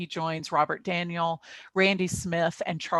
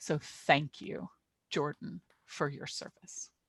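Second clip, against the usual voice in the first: near-whisper, soft, getting choked up; 7 dB quieter than usual. Thanking jordan for their service while rotating off, a little choked up. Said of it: "I'm getting a little choked up".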